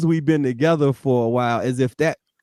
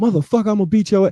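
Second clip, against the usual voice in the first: mock furious voice, higher pitched; 6 semitones higher than usual. Acting out how far the emotion goes: an angry outburst. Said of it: "How far does this emotion take you?".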